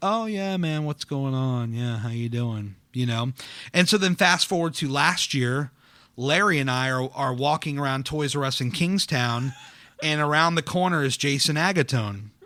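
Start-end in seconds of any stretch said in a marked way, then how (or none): 0.0-2.7 slow, soft, begrudging tone. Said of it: "begrudgingly talking to me".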